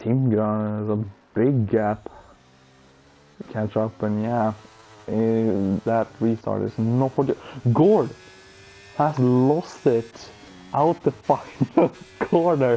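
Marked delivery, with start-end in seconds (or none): 7.7-12.8 words broken up by laughter. Commentating as a driver loses it at the final corner: laughing while talking. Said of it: "I'm so sorry for laughing".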